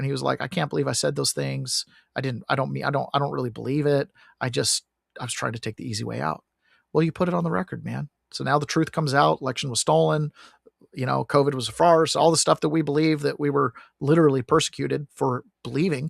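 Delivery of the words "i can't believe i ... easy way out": put-on tearful voice. Retelling what he said in the pod: imitating someone crying. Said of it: "he got real emotional and started crying".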